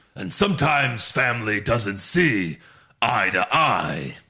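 very slow, drawn-out delivery. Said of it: "the way he said it very slowly".

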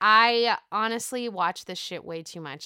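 normal talking voice

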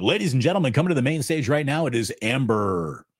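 hyped, excited club emcee announcer voice. As if you're an MC at a seedy club hyping up the crowd before a dancer steps out, loud, gravelly and leering. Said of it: "we could go smooth DJ".

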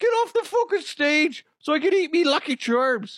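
put-on high-pitched Irish accent. Speaker redoes a get-off-the-stage line as if Irish: Conor McGregor Irish accent. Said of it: "I have a gift with the Irish accent".

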